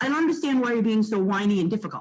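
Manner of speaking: ordinary talk, nothing marked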